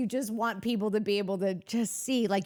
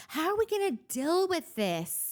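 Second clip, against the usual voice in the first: put-on baby voice, pitched higher; 8 semitones higher than usual. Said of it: "that has, like, a baby voice".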